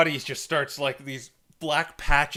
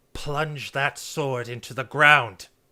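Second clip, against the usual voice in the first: firm, commanding, authoritative woman's voice. Telling a player he hears a voice in his head, a very authoritative female voice. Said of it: "a very authoritative female voice says".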